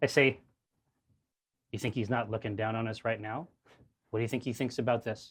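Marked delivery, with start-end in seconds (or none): 1.7-5.3 very quiet, hushed, barely-above-a-hush voice. In a role-play scene, speaking to someone about their dead father, quiet voice. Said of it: "Just in a quiet voice with the arm against my chest".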